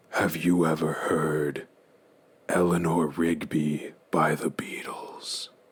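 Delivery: pure, completely unvoiced whisper. Voicing a figure who leans down to a player: whispering. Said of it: "The figure leans down and whispers".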